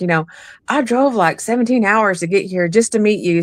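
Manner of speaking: gentle mock pleading, playing on sympathy. Retelling what is said to spirits: imitating own sympathetic plea. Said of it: "I try to play on their sympathy".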